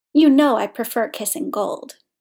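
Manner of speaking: ordinary delivery, nothing marked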